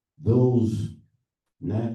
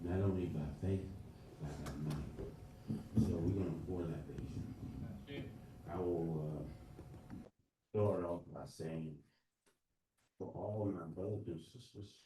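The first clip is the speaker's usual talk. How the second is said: so quiet it cannot be heard. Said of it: "Could you speak a little louder".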